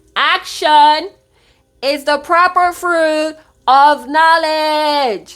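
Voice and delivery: loud, high, slow proclaiming.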